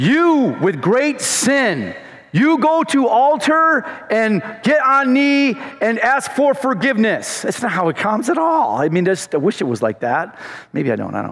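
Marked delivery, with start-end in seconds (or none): 0.0-7.4 slow, drawn-out, high-pitched, booming heavenly voice. Joking about how God does not speak: mock booming God voice. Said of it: "It's not like".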